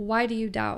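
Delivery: ordinary delivery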